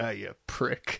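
soft, grumbled mumble under the breath. Retelling a movie cameo where Freddy curses as a door closes: Freddy mumbling. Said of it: "you hear Fred mumbling".

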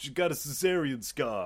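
normal talking voice

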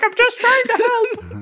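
slow creepy woman's voice.

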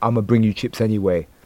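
normal talking voice

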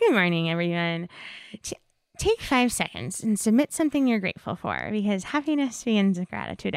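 soft, calm, lulling, soothing ASMR voice. The speaker imitates how a woman opens her Instagram stories every day: imitating her ASMR-like voice. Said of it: "she says it in that voice".

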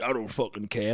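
muttered under breath. Retelling what you say back when being told off, muttered under breath. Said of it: "Like under my breath to you".

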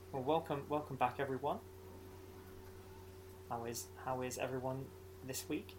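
somber, moody tone. Opening the show with a welcome, trying for a somber tone. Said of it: "I was trying to be all somber".

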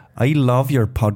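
attempted Welsh accent drifting into Irish accent. Trying a requested accent in an accent game, welsh accent slipping into irish. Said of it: "He's creeping in there".

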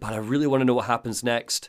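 ordinary talk

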